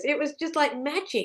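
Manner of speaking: ordinary delivery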